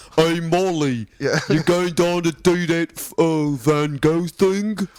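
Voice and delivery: goofy made-up silly voice, high-pitched and drawn out. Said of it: "I'm guessing it would be like this".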